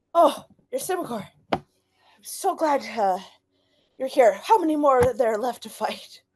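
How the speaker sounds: panting character voice. Veris greets Yrsimagor after fighting, panting while talking. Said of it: "you see him like panting".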